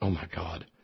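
hushed, soft, stunned exclamation.

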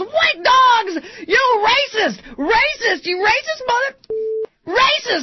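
mock very high, shrill, drawn-out top-of-the-lungs screaming. Retelling how a stranger on the street screamed at them, retelling a scream. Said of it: "screaming at me at the top of his lungs".

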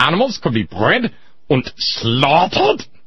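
high-pitched stock villain German accent. Showing off a stock villain voice: bad guy german accent. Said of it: "that's my stock bad guy German accent".

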